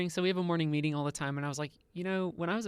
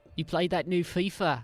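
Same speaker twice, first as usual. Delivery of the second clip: bad, unconvincing put-on Australian accent; 4 dB louder than usual. Doing a bad Australian accent as a colleague greeting Heather. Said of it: "he sounds nothing like that".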